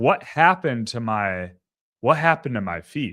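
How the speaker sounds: normal talking voice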